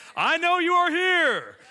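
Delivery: slow, deliberate, loud yell. Retelling calling into the house to whoever might be there, retelling a yell. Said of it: "I'm yelling because I want whoever's in there to know".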